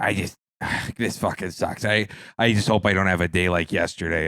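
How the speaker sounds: put-on, mimicked smoker's voice. Retelling what a woman up front at a Speedway said, imitating a smoker's voice. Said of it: "she had like a smoker's voice".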